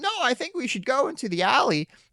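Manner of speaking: very high, weak, pathetic voice, swooping. Retelling a story, the speaker voices Clark answering Lois in a put-on weak, pathetic voice. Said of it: "he's like trying to be weak and pathetic".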